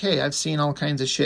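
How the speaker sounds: ordinary delivery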